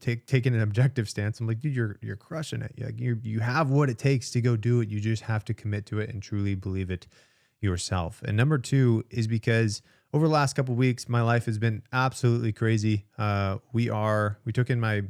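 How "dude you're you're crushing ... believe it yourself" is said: plain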